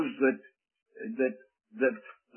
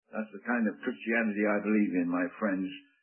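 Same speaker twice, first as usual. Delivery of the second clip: ordinary talk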